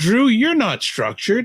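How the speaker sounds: very high, loud, laid-on sing-song sarcastic voice. Remarking to another speaker after saying goodbye on a call: sarcastic voice. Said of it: "that's your sarcastic voice right there".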